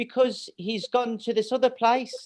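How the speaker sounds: mild put-on English accent. Imitating how you talked as a small child: imitating own childhood English accent. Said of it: "I am talking like that".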